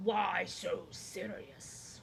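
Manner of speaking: very deep, ridiculous, overdone villain growl. A performer tries a dark hero's voice, asking a question, then laughs at how over the top it was. Put-on very deep villain voice. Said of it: "my witch voice".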